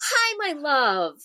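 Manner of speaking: bright, lively, high voice. Greeting the child when she comes into a room, bright voice. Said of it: "I have to say in a bright voice".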